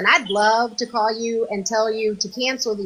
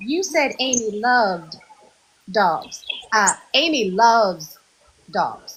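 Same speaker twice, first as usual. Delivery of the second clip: put-on sweet, sugary, kind, gentle, polite tone. Retelling a caller's gentle correction on the phone: kind imitation of Iva. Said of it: "just as kindly as she possibly could".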